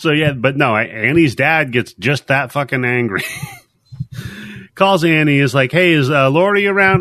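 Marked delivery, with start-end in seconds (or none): 5.7-7.0 mock-calm, put-on composure, higher pitched. Retelling how an angry dad phoned his daughter asking for someone, imitating forced calm. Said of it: "He's trying to sound calm".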